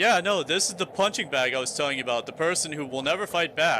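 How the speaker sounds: ordinary delivery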